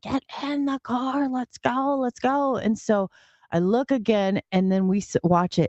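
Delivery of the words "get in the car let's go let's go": put-on high, urgent scream. Speaker retells what Jessica shouted at them, imitating Jessica screaming. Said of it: "she's screaming now at the top".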